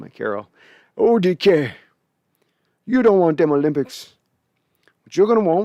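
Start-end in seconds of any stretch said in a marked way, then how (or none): 1.0-5.7 put-on old grandpa voice, higher and louder. Giving advice to a player as his grandpappy: put-on grandpappy voice. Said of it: "I don't know why I'm doing this voice".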